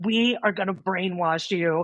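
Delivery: put-on gravelly, raspy voice. Retelling what a man at acupuncture school said in class, imitating his gravelly voice. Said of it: "he had this real gravelly voice".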